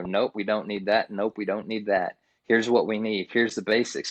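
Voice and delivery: ordinary talk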